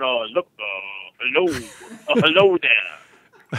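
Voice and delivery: low, slow sixties drawl. Imitating how a comedian mockingly does a president's voice: imitating Bill Maher's Obama impression.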